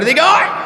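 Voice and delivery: furious, royal-sounding voice.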